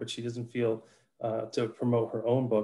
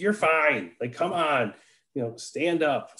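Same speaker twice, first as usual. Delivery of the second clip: mock straightforward, very male, loud, blunt voice; 4 semitones higher than usual. A former principal retells what they used to say, in a loud, straightforward male voice. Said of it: "in my very male, straightforward, loud voice".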